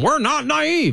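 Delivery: play-acted shrill, very high-pitched petulant bark. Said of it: "He barked at the room".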